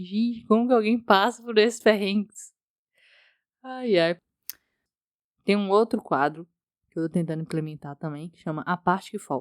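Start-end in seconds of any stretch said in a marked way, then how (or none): 0.0-2.5 put-on, amused voice, spoken through laughter. Speaker recalls what they said on arriving at the Airbnb: retelling words said while laughing. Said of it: "falei rindo".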